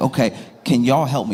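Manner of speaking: ordinary talk, nothing marked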